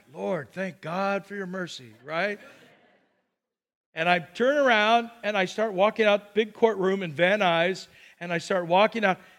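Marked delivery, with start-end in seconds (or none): 0.2-1.9 quiet, hushed, private murmured voice. Retelling thanking God after the judge lets him go: quietly retelling own prayer. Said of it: "I just quietly".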